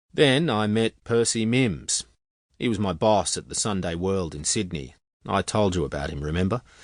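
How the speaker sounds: ordinary delivery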